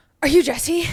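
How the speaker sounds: very loud, high, frazzled and flustered. Retelling how a late acupuncturist greeted her: imitating someone flustered. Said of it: "she approaches me very flustered".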